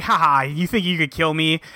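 mock scornful tone spoken through laughter. Retelling a fight scene where Kijima laughs at a threat: mock-laughing Kijima taunt. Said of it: "Kijima starts laughing".

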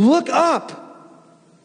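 yelled, very high-pitched shout. Xavier reaches back to steady Brianna as she is about to fall, shouting. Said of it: "he shouted".

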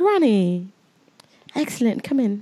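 fake, put-on British accent. Imitating a fashion editor greeting Ronnie: put-on British accent. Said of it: "your British accent kills me".

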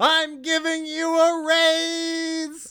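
very high, very slow, drawn-out scream, acted out. Retelling a scene where a character suddenly screams: imitating a scream. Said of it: "screams out".

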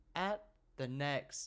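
very slow, plodding sat-nav voice. Co-host imagining driving while the sat-nav gives directions, Terry the sat-nav voice. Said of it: "Terry the sat-nav does talk very slowly".

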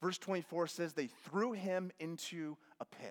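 usual speaking voice

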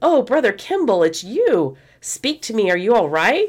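high, startled, surprised exclamation. Telling a story, acting out a woman's line on finding him beneath her: retelling an exclamation.

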